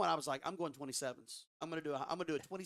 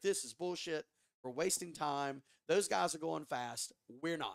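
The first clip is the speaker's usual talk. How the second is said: ordinary delivery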